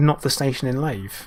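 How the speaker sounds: ordinary delivery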